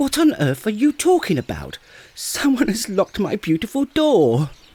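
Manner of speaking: very high, loud, excitable, flustered squeal. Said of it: "you excitable little fellow".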